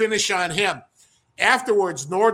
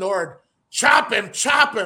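put-on urgent, loud yelling. Retelling a match where one wrestler shouts orders: imitating Frank yelling. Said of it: "he's yelling".

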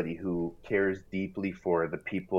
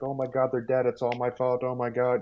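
panicked, freaking-out robot voice; 5 semitones higher than usual. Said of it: "C three P O was freaking out".

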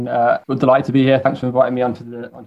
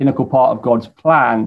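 ordinary talk, nothing marked

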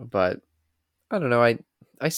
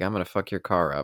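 plain

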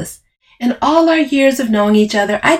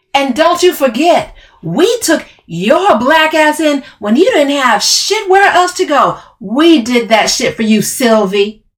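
high, furious, angry yelling; 6 semitones higher, 3 dB louder than usual. Narrating a story, Camille confronts Sylvie: yelled. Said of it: "Camille yelled".

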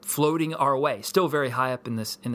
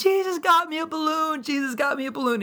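put-on very high, thrilled, excited little-girl shriek. Father retelling his daughter's reaction to a balloon, imitating a child screaming. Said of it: "starts screaming".

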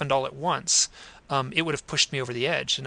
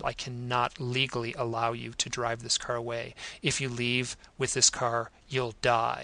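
put-on grave tone, soft and very serious; 2 semitones lower, 6 dB quieter than usual. Retelling what a mechanic said to them about their car, retelling a very serious tone. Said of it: "said in a very serious tone".

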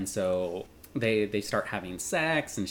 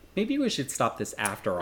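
normal talking voice

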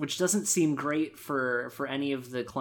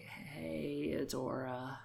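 put-on extremely weak voice, much quieter; 12 dB quieter than usual. Recounting the scene where Catra wakes up, imitating Catra's weak, quiet voice. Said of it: "extremely weak, extremely quiet voice".

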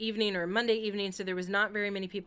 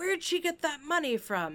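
loud, high-pitched, blurted-out speech; 7 semitones higher than usual. Retelling what a moviegoer said during the film: imitating a loud moviegoer. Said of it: "really loudly".

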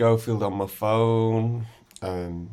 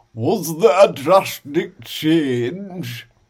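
very slow, loud, teasing mock copy of accent; 6 semitones higher, 7 dB louder than usual. Retelling how Southerners after a gig copied the way he spoke: imitating someone mimicking his accent. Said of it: "they mimic your accent".

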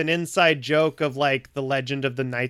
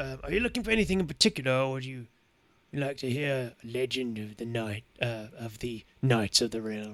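put-on grizzled old man voice, quieter; 6 dB quieter than usual. Game master voicing an old, grizzled human offering the players a legend: old grizzled man voice. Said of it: "you see this old, grizzled human".

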